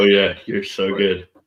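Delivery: mock sarcastic tone. Mimicking the sarcastic praise given about the commentating: imitating sarcastic praise. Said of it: "I was told really sarcastically that I was good at it".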